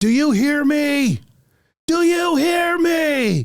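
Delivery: play-acted, very high, full-lunged scream. Retelling a woman yelling at a council meeting, imitating someone yelling. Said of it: "is yelling at the top of her lungs".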